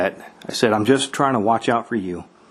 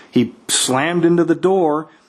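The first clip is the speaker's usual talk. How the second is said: ordinary talk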